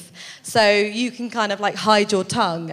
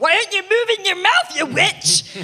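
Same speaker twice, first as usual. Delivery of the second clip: put-on irate, angry, pitched-up Scottish accent; 11 semitones higher, 4 dB louder than usual. Recalling a hidden camera shoot, imitating a bystander in a mock-angry Scottish accent. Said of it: "it's like angry Scottish people".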